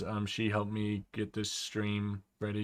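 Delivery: ordinary talk, nothing marked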